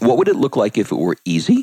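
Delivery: squeaky slip, voice squeaks mid-sentence. Reading out a question to write at the top of the page, voice squeaking. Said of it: "I don't know why my voice squeaked there".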